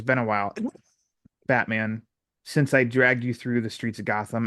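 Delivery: plain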